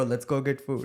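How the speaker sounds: put-on Indian accent. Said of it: "say it with the Indian accent".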